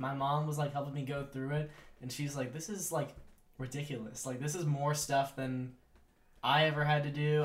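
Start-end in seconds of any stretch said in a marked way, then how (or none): none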